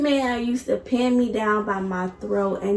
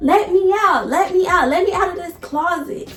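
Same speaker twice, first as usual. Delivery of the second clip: high, pitched-up yelling repeated over and over; 7 semitones higher, 3 dB louder than usual. Retelling being locked in a closet: imitating own past yelling. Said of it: "I'm always yelling".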